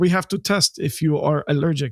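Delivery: put-on Israeli-accented speech. Retelling what the beekeeper said before the test sting: Israeli accent. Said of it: "'cause he was from Israel".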